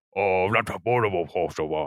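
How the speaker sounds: drop into a deep alien creature voice. Showing what a Hutt sounds like to them: imitating a Hutt speaking. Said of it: "our feelings for what a Hutt sounds like".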